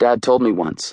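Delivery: ordinary delivery, nothing marked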